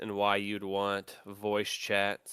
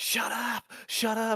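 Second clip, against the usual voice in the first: put-on squeaky, very high-pitched gamer kid yelling; 13 semitones higher than usual. Retelling an old video where a gaming kid snaps at his mom, imitating the gaming kid. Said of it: "He's like".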